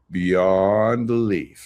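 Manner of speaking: slow, dragged-out "beyond belief". Showing how people he calls idiots drag out their words, drawn out. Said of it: "Just drag it out, just like these idiots do".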